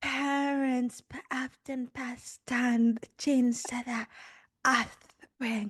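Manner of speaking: put-on breathy, seductive voice. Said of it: "she's struggling to speak".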